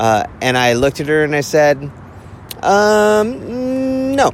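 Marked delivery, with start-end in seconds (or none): 2.6-4.3 high-pitched, dismissive um, no. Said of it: "And I literally said it like that".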